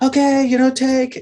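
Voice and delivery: very high, called-out yell, acted. Retelling calling down to a climbing partner: imitating a yell. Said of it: "and so I yell".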